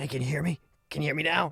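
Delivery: faint, far-off voice barely coming through. Retelling a faint voice you heard calling out, use a really, really quiet voice. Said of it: "really, really quiet voice".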